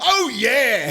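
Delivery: very high, very loud shriek. Imagining teens in a game doing the move: imitating Ryan screaming. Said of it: "just screaming like Ryan".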